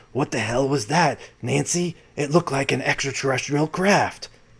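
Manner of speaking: soft, hushed, put-on impression voice. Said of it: "I like doing my Reagan impersonation".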